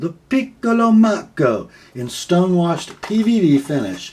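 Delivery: bad put-on Italian accent, loud and high. Describing a fixed blade knife and its finish, lame Italian accent. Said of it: "That is a lame Italian accent".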